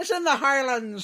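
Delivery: shrill, very high, very loud Irish accent. Speaker explains that Aberdeen is in Scotland, accidental Irish accent. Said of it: "Why have you done an Irish accent?".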